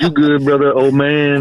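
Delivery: imitated heavy Hawaiian accent. Retelling what a man would say when a little drunk, imitating a heavy hawaiian accent. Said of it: "He has a heavy Hawaiian accent".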